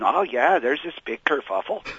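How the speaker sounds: put-on slight touch of Minnesotan accent. Retelling what a woman who works there said, in a Minnesotan accent. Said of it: "sort of a Minnesotan kind of accent".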